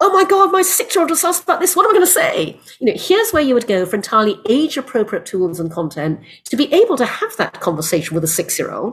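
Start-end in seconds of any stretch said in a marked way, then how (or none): 0.0-2.6 panicked, freaking-out voice. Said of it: "a parent freaking out going".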